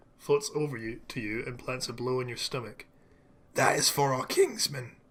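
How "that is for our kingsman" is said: loud chittering little creature voice. Narrator voicing a creature leader that has just struck the listener, chittering creature voice. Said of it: "he chitters".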